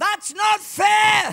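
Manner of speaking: very high, furious, shrill devil screech. Acting out the devil screaming at the referee: screaming as the devil. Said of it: "he screams in the face of Grace".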